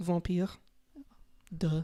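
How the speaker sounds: French-accented pronunciation. Asked how to say vampire in French, answering with a French accent. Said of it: "It's vampire with a French accent".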